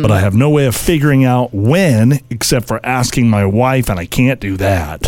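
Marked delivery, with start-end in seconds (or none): none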